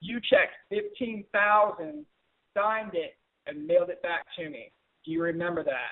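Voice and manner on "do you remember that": falling pitch at the end on that. Teaching upswings and downswings, question with falling pitch on that. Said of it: "everything I ask is downswing".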